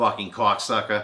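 very loud, put-on Boston accent. Showing the other speaker the accent again: put-on Boston accent. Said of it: "My Boston accent".

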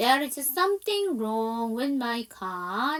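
very slow, careful, clear practice reading.

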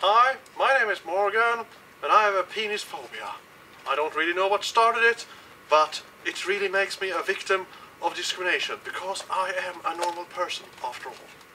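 low, soft put-on character voice, dropped way down.

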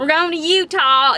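put-on, loud, high country accent. Announcing a trip to Utah in a country accent. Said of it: "I don't know why I did a country accent".

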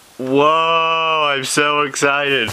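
insincere sarcastic put-on excitement, drawn-out "whoa". Character reacting to another's announcement of The King of Rock, sarcastic. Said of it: "That's sarcastic!".

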